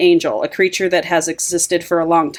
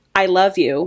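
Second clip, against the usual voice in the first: imitated whisper. Retelling a book scene where one character speaks in another's ear: retelling a whisper. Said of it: "She whispers in her ear".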